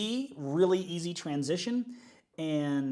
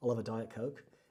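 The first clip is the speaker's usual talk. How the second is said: put-on soft, convincing, flawless Australian accent; 6 semitones lower, 7 dB quieter than usual. Speaker imitates their Australian boss ordering from a server, Australian accent.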